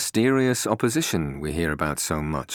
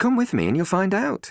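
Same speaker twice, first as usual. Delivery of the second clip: composed, even, calm voice pitched very high; 14 semitones higher than usual. A woman answers a doubter's question about her confidence; calmly. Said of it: "she replied calmly".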